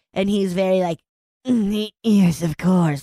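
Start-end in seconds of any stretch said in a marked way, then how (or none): 1.4-3.0 imitated creepy voice. Retelling a scene in which a priest agrees to help: imitating a creepy priest. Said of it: "so fucking creepy".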